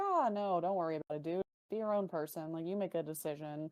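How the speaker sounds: put-on sunny voice with sarcasm. Retelling how Finn answers about Liv: sarcastic Finn impression. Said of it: "how sarcastic Finn is about Liv".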